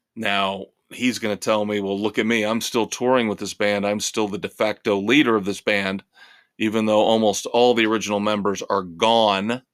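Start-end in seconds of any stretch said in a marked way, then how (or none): none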